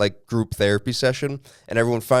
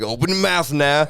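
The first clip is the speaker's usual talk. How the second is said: high-pitched, put-on New Orleans accent; 5 semitones higher than usual. Retelling a reality show challenge host's line: imitating a New Orleans accent. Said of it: "doing, like, a New Orleans guy the whole time".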